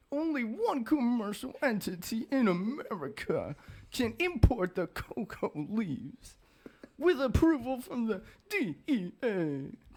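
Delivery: very high, swooping, put-on babyish baby talk. Speaker delivers a fact to an audience in a baby talk voice. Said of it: "this is a fact for the bird, and in delivered in baby talk".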